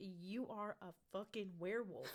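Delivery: put-on angry, ranting voice. Retelling a dream where a man demands a werewolf transformation: imitating someone getting mad. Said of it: "he was getting mad at me".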